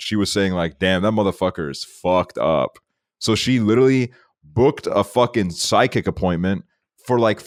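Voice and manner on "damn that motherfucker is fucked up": put-on muttering under breath. Retelling what a grandmother said about acne: imitating someone muttering under breath. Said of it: "under her breath".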